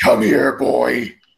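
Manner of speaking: very low, deep, rough and angry growl. Showing how he sounded like a generic angry guy, in a growling Agent Smith voice. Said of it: "his Agent Smith voice with a growl".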